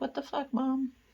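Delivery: high, angry, pissed-off cat voice talking back. Voicing the cat, upset the door stays shut: voicing an angry cat. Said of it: "My cat is so pissed right now".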